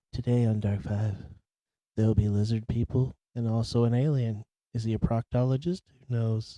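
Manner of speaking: low, even, steady delivery. Imitating the Dark Five channel narrator introducing an episode: imitating the Dark Five narrator. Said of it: "he talked like this".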